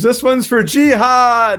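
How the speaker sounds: imitated scream. Retelling a story scene where the kid rides at a bus: imitating a scream. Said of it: "and he screams".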